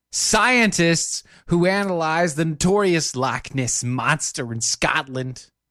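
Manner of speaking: very bad, clumsy put-on New Jersey accent. Reading a news item aloud, in a bad New Jersey accent. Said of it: "very bad, just, you know, New Jersey accent".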